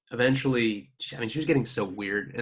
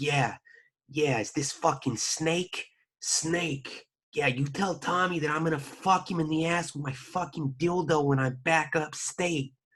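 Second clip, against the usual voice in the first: high, put-on woman's voice; 5 semitones higher than usual. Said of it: "She'd be like".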